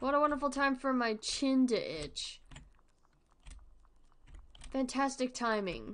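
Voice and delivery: dry sarcastic tone. Reacting to a badly timed itch while playing: sarcastic. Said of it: "That is sarcasm".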